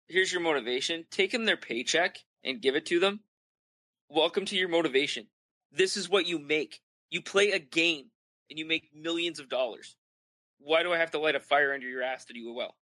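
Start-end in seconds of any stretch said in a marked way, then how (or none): none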